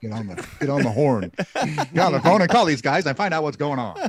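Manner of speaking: put-on old-timey 1920s newsreel announcer voice. In a group conversation, suddenly slipping into a 1920s news reporter voice. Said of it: "just turned into a twenties news reporter".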